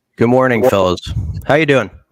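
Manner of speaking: very loud, booming morning radio announcer voice. A caller greets the show's hosts, in a radio voice. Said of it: "I kind of like the radio voice".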